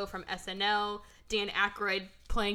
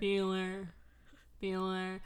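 flat, boring, dead-level monotone with no life; 5 dB quieter than usual. Quoting a teacher's roll call after calling the actor boring: Ben Stein Bueller impression. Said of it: "'cause he's so boring".

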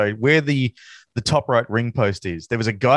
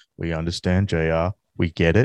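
flat, lifeless put-on voice, lower and slower; 7 semitones lower than usual. Mocking a wrestler's reply to JR, flat Sergeant Slaughter impression. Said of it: "an absolute vacuum for charisma".

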